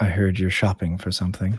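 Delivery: deadpan, expressionless, very flat monotone. A hooded figure sits down across from the player and speaks in a flat monotone voice. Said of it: "you hear a very flat, monotone voice".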